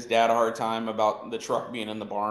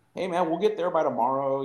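teasing, joking, poking fun, pitched up; 6 semitones higher than usual. Retelling teasing a friend about slow driving in the car: imitating own teasing. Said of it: "so I just start poking fun at him".

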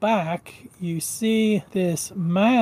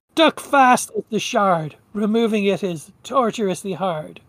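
put-on elderly man voice. Narrating a game scene where the wolf creature speaks, old man's voice from wolf. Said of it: "you hear the old man's voice come out of the wolf creature".

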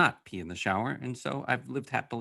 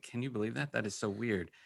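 acted talking while laughing, much quieter; 9 dB quieter than usual. Recalling turning to a roommate, retelling laughing speech. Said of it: "turning to my roommate and laughing".

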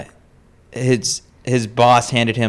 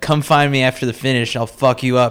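put-on yelling; 2 semitones higher than usual. Retelling how the other speaker threatened a runner mid-race: imitating someone yelling. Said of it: "you yelled at him".

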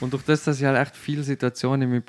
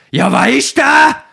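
shrill, booming, rough, drawn-out yell; 13 semitones higher, 14 dB louder than usual. Telling how a man questioned him, acting out the man shouting at him. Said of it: "Und dann schreit mir an".

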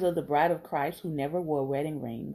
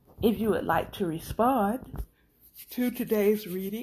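high, stretched speech spoken through a yawn; 5 semitones higher than usual. Podcast host inviting listeners to respond to today's reading, yawning. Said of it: "I don't know why I'm yawning".

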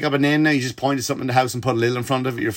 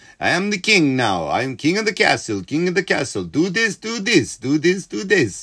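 slow, high-pitched comic character voice; 4 semitones higher than usual. Retelling a joke clip that was reposted, imitating Borat. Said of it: "Borat, Sacha Baron Cohen going".

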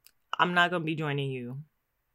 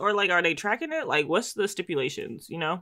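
ordinary delivery

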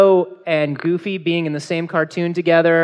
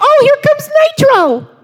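very high squeaky voice. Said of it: "you say 'em in a squeaky voice".

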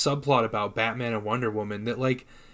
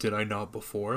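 put-on robotic voice, quieter; 3 semitones lower, 6 dB quieter than usual. Retelling a film scene, quoting Superman's reply: robotic Superman voice. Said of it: "Like some kind of robot".

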